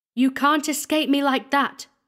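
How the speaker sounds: high ringing call-out. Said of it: "cried the squire".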